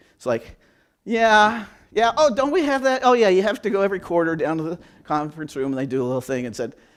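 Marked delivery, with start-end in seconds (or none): 1.1-6.5 play-acted indifferent, can't-be-bothered, offhand tone. Acting out employees asked about their recognition program: imitating apathy.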